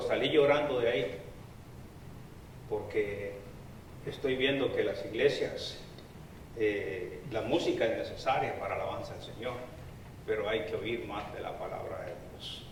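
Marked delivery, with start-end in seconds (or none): none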